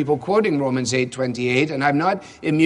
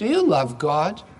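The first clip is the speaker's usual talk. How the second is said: put-on small, childlike voice. Recalling small children asking each other from the back seat, tiny little voice. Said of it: "Just in their tiny little voice".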